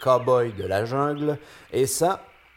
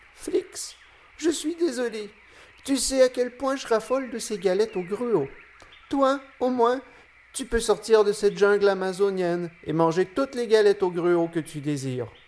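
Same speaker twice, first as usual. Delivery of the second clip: tiny, small, high little spider voice; 9 semitones higher than usual. Narrator voicing the tarantula as explorer Flix is about to scold it; Api's small spider voice. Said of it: "la petite voix d'araignée d'api se fait entendre".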